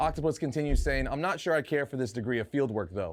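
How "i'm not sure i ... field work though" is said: ordinary talk, nothing marked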